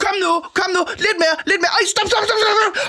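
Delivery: very high, shrill, impatient shouting. Speaker acting out a man guiding parallel parking, imitating Karsten shouting. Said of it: "Og sådan råber en".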